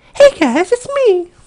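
put-on very high, slow, drawn-out girly female voice. Trying out whether they can do her voice, impression of her voice. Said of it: "I'm going to see if I can do it right now".

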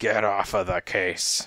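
plain reading voice

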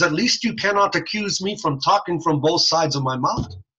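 put-on French-Canadian accent, politician voice. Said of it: "He talks like this".

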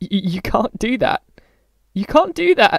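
loud, high, cracking, breaking cry. Reading a novel, Winston cries out on seeing the cage, in a high, cracked voice. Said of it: "he cried out in a high, cracked voice".

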